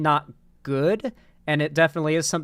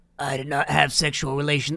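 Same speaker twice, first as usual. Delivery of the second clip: put-on raspy, rough voice. Attempting the same quote again and again, doing a raspy impression. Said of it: "he had this like raspiness to his voice".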